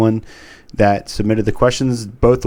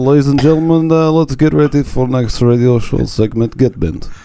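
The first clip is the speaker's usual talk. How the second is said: chilly acted Eastern European accent; 4 semitones higher, 5 dB louder than usual. Redoing an intro for a radio show segment, in a cold Eastern Bloc accent. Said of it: "definitely felt more cold, more Eastern Bloc".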